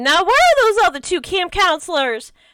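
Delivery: very high, swooping, loud calling-out shout. Voicing a camp counselor calling for the others: yelling. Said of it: "Sandy yell".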